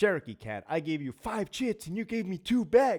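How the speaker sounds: mock argumentative complaint, high and rising. Imitating someone arguing at a prison's central control window: mock-argumentative voice. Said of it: "I say it in that voice because anybody that's ever seen somebody get argumentative".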